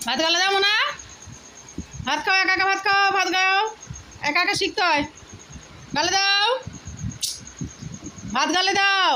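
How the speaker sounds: high, loud, insistent urging tone.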